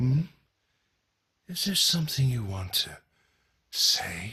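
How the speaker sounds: eerie, creepy voice. In a scene, addressing a character who wants to nap, creepy voice. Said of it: "You're getting very creepily voiced there".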